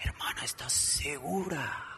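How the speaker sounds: sinister, macabre, hushed, whispering devil voice. Speaker acts out a doubting question put to a wife, in a macabre voice. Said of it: "puedo hacer hasta la voz macabra".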